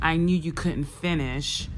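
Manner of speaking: ordinary talk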